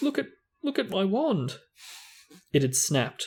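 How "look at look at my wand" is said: very high, shaky, trembling voice. Narrating a novel, voicing Ron right after a crash, in a shaky voice. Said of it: "said Ron in a shaky voice".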